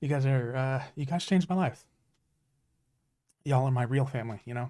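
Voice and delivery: moved, heartfelt, emotional delivery. Thanking friends who changed their life, getting emotional. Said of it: "oh God, the emotions".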